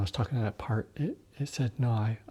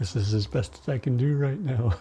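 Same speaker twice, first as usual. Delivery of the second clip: ordinary delivery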